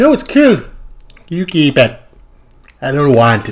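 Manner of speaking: attempted, put-on Scottish accent throughout. Repeating a line after another speaker, trying an attempted Scottish accent. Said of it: "I feel like I did a good job".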